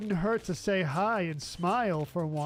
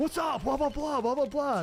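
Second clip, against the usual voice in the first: mock aggressive pushy tone, higher; 8 semitones higher than usual. Imitating someone approaching hikers in the woods: imitating an aggressive approach. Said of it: "just aggressively, like".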